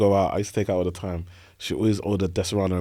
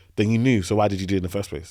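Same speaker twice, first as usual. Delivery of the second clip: plain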